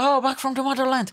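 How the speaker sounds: put-on Irish accent. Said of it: "the Irish accent. Gonna be like".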